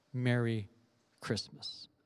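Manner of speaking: soft, low, simple, understated, trailing away softly. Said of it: "just a simple, understated".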